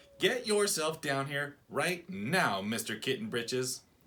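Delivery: loud, scolding motherly voice. Narrator reads the mother ordering her kitten downstairs, Mama Junebug Jones ordering. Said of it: "ordered [name]. / said his mother, / she scolded".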